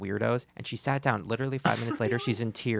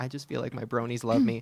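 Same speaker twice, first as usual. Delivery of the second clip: put-on crying, tearful voice. Retelling a son's words about letters from fans: imitating someone crying.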